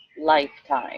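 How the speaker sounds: leaning hard on 'this lifetime'. Explaining the life lesson of the sixth chakra, stressing 'this lifetime'. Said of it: "I'm stressing the word this lifetime".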